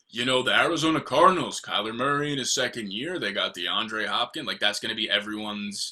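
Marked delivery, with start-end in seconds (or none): 0.5-4.5 goofy, dopey, dim-witted parody voice. Mocking Alex's sleeper pick in a dumb voice. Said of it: "Saying it in a dumb voice".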